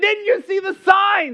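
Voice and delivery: play-acted scolding yell, shrill and very high-pitched. Retelling how the angry landowner shouted a question: imitating a yelling landowner. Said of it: "She's yelling".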